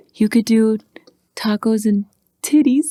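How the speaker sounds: put-on whispering voice. Retelling a phone call with grandma, imitating grandma whispering. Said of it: "whispering into the microphone".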